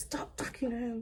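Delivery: mock-angry voice. Recounting getting into an ex's car as a sister comes to the door, retelling being mad. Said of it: "I was so mad".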